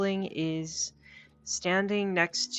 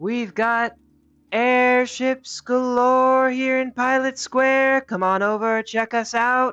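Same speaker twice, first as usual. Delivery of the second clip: very loud, high barker's shout at full volume; 8 semitones higher, 11 dB louder than usual. A halfling by the bar calls out to passers-by, shouting. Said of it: "and he's shouting".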